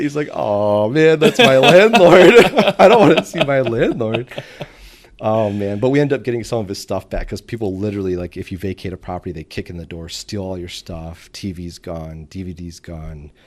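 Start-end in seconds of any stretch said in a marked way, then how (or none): 0.3-4.3 high, loud distressed tone. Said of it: "he was so upset".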